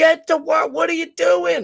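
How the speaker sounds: very high, loud, shrill screaming. Acting out screaming at a president to get to work: acting out screaming at someone. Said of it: "I'm fucking screaming at him".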